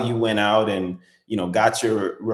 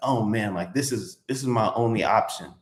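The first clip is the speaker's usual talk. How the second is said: desperate, needy, overeager tone; 4 dB quieter than usual. Showing how not to sound in a negotiation: sounding desperate. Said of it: "You don't want to come off as desperate".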